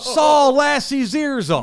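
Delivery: very high, drawn-out, crazed, acted-out yell. Retelling own call after a walk-off home run: imitating own crazy yelling. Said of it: "We're going crazy".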